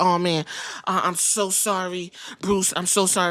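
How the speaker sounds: play-acted frantic, panicky, drawn-out delivery. Retelling an apology after a wrestling match overran, mock panicked apology. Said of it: "Chris Park is literally having a meltdown".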